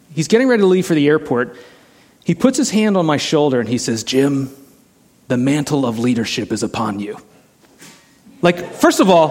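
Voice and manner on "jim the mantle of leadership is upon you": rough, really gravelly rasping voice. Retell what he said to you before leaving for the airport, imitating a really gravelly voice. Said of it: "his voice is really kind of gravelly like this".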